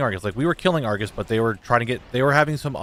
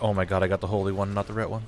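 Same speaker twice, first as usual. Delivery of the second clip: mock crushed, beaten-down, defeated groaning voice; 2 semitones lower, 4 dB quieter than usual. Retelling how a friend got the wrong trinket: imitating someone sounding defeated. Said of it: "just how defeated he sounded".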